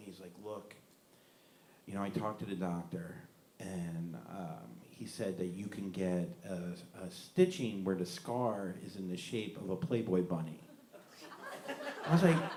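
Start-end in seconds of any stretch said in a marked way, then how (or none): 0.4-10.6 real low, very soft, deep, hushed voice. Quoting the speaker's brother, who took them aside, in a real low voice. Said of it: "real low voice".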